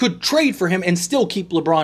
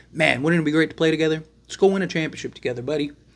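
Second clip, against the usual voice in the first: pretend, persuasive whisper. Playing LeBron coaxing a player to join him: LeBron whispering in his ear. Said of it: "I'm whispering in his ear".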